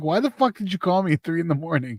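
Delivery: annoyed tone. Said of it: "and then he'll be like".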